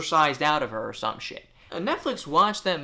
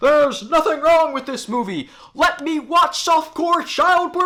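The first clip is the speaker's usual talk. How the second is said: very loud, very high full scream; 12 semitones higher, 9 dB louder than usual. Mocking people on Twitter defending a movie: imitating people screaming. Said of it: "screaming at the top of their lungs".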